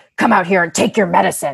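angry put-on character voice, fully in character. Retelling how the audiobook reader voiced angry Jack: imitating audiobook angry Jack voice. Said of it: "he puts on this voice".

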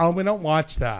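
put-on mocking voice. Teasing the others about not watching movies: mocking people who don't own TVs. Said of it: "Please tell me you guys aren't those like".

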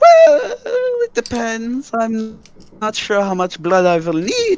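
put-on drow elf man's voice, high and swooping. A drow elf man hunched over a dwarvish body answers, drow elf man voice. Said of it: "And then there is a drow elf man hunch over a dwarvish body".

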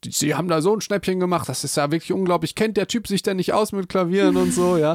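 mock indignant, very angry voice. Speaker acts out their piano tuner's reaction, retelling an angry rant. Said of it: "die war richtig sauer".

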